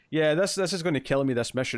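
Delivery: ordinary delivery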